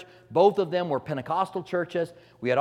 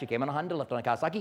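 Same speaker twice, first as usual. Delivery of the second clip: very fast, rapid-fire delivery, faster; 6 dB quieter than usual. Speaker demonstrating what speaking in tongues sounds like: said really fast. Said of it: "You say that really fast".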